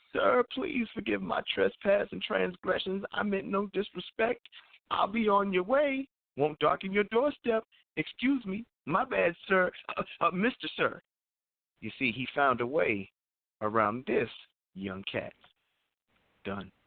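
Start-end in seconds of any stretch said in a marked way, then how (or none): 0.2-11.0 deflated, squeaky, very high-pitched voice. Retelling begging an older man with a gun: imitating his own high, shrieking voice with no bass. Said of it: "let the bass air out of my voice".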